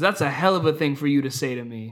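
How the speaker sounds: put-on hurt voice. Retelling a movie scene where Doc answers Wyatt Earp: imitating Doc Holliday sounding hurt. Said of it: "like, up, like, hurt, and he goes".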